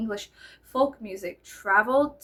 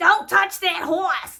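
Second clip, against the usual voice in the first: loud, pitched-up put-on Boston accent; 9 semitones higher, 8 dB louder than usual. Asking how the boston way of talking came about: imitating a boston accent. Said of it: "So what happened in Boston?".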